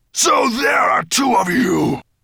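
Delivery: very high, booming, hollow bellowing shout. Reading a story, the narrator voices Nettlebrand growling at two circling dragons, deep, hollow, booming. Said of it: "deep and hollow as if it were booming down an iron pipe".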